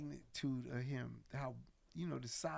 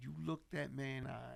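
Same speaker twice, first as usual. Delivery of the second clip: ordinary talk, nothing marked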